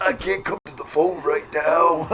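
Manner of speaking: low, sickly voice, sounding too sick. Answering a jab at their impression, Randy Savage calling in sick. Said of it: "sounds like he's tr- trying to call out work sick".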